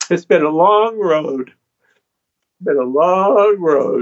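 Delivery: slow words, voice catching, choked up with emotion. Reflecting on a long road after recalling a dream and a letter: choked up. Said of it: "I can't help but sometimes get choked up".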